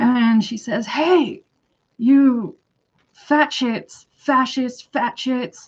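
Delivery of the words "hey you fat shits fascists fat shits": mock, very slow, high, drawn-out, feisty screaming. Retelling how a woman screamed at everyone walking by: retelling a scream. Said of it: "then she screams at this woman".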